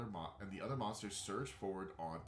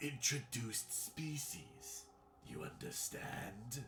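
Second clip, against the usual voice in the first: broken, halting, raspy, pitched-up monster voice; 5 semitones higher than usual. The talking horror addresses you as you strain to understand: halting, rasping voice. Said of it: "halting, rasping voice".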